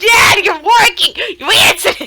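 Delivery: very high yell at full voice, very loud. Retelling a cartoon gag where characters yell at their dad: imitating yelling. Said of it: "they're yelling at him like".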